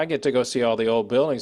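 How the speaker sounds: ordinary talk, nothing marked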